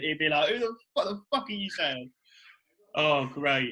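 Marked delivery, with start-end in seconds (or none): 0.5-2.1 put-on rapid, rattled-off Welsh accent. Act out how he would answer, as Flex Lewis in his Welsh accent. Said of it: "in his Welsh accent".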